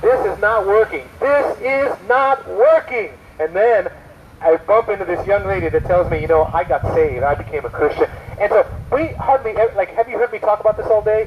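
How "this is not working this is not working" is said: play-acted top-of-the-lungs yell, high and drawn-out. Retelling a young man screaming at a preacher, retelling a scream. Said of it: "top of his lungs".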